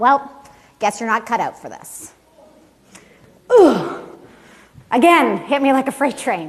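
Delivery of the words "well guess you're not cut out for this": bone-dry, straight-faced, deadpan delivery. Quoting her reply after being told of a panic attack, retelling a deadpan remark.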